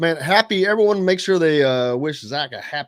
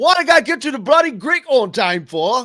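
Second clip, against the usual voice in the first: put-on very strong British accent, pitched a little higher; 8 semitones higher, 3 dB louder than usual. Quoting a line from the movie, imitating Russell Brand: Russell Brand impression. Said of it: "his accent is as British as British".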